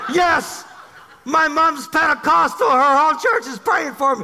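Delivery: high-pitched, heated yelling. Retelling a man's yelled answer during a shouting exchange: imitating a man yelling. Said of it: "so we're yelling back and forth".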